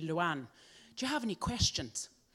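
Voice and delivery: put-on lovely Irish accent, Dublin style. Retelling what her head surgeon from Dublin asked her, in an Irish accent. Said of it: "So I have to use a lovely accent for a minute".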